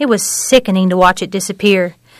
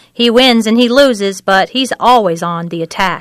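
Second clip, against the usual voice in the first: ordinary delivery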